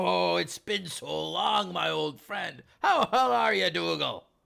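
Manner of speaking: loud, gruff dwarf voice, hollered out. As the dwarf greeting his old pal dougal: dwarf yelling out. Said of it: "the dwarf yells out".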